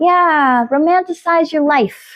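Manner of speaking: New York accent slipping in suddenly. Talking to listeners, slipping without reason into a new york accent. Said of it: "I don't know why I got a New York accent there just now".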